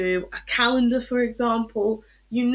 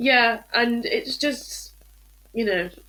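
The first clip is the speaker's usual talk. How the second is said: tearful, choked-up speech, words breaking up. In a conversation with others, apologizing afterward, crying while speaking. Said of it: "Sorry, I'm crying again".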